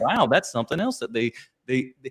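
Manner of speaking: ordinary talk, nothing marked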